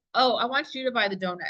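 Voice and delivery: ordinary talk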